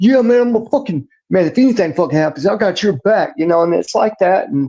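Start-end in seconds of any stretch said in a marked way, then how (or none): 0.0-3.3 hyped, juiced-up, pitched-up cop bravado. Imitating a rogue cop hyping up fellow officers: imitating a pumped-up rogue cop. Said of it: "on the juice and, like, pumped up".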